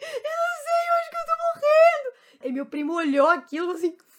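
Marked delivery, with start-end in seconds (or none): 0.0-2.2 acted crying scream, much higher and louder. Retelling her past self answering her cousin in the night, retelling screaming and crying. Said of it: "Gritar e chorar".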